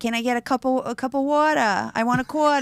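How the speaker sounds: put-on Long Island-accented speech. Imitating how she sounded as a kid: thick Long Island accent. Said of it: "That's how it used to sound".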